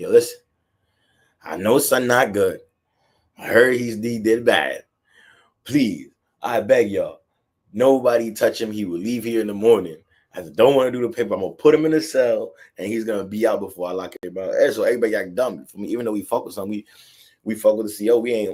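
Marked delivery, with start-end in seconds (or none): none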